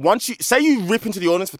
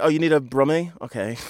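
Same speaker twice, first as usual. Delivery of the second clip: ordinary delivery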